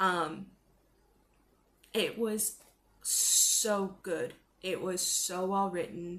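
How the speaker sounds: tearful voice, holding back tears. Recommending a favourite book to the camera, tearing up while talking. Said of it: "I'm even tearing up now".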